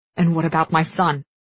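ordinary delivery

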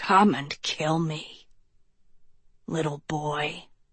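very quiet, low, hushed, raspy snake voice. A narrator reads a snake's words to a fallen boy, in a raspy snake voice. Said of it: "the snake rasped".

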